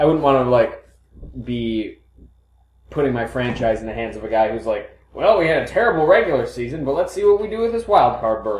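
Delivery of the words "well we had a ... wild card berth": put-on Western cowboy accent, pitched up. Imitating a hypothetical coach with a put-on cowboy accent. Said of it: "I gave him a, a cowboy accent".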